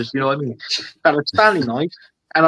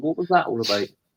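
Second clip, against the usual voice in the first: plain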